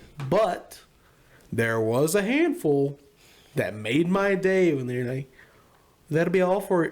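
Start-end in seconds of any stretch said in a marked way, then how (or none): 6.1-6.9 exaggerated, over-the-top North Dakota twang. Retelling a local speaker from North Dakota: exaggerated North Dakota accent. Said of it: "the stupid-ass impression that we do".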